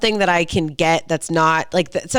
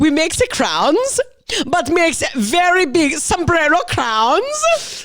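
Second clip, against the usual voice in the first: bad German accent, very high, swooping, sounds stretched; 10 semitones higher than usual. Continuing a made-up restaurant story, in a terrible German accent. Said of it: "a terrible German accent".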